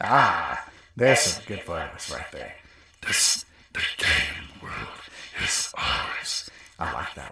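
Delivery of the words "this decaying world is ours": slow voice with ghostly effect laid over. Testing voice effects, the speaker says a line with a ghostly voice effect. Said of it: "Had kind of like that ghosty sound effect there".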